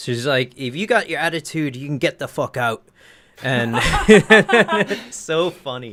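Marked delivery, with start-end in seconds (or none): 0.6-2.8 fast, put-on, no-nonsense Irish accent. Retelling what a woman told drunk people, imitating an Irish accent. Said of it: "I need your Irish accent more".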